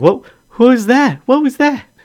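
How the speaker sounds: shrill, very high, very loud rising startled cry. Voicing someone upstairs as a teacup is dropped: surprised voice.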